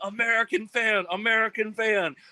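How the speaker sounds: put-on, repeated, very high-pitched excited scream. Retelling a man dragging the speaker to a band's camper, imitating someone screaming. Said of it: "he's screaming".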